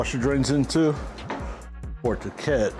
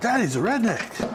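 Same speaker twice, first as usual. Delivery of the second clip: put-on excited voice; 9 semitones higher than usual. Retelling what someone said after getting all excited: imitating someone excited. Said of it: "she got all excited".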